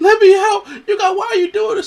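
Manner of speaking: very high, loud, hysterical, tearful sobbing scream. Acting out the woman who wants out of the chamber, imitating Bianca screaming and crying. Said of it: "and she's like screaming and crying".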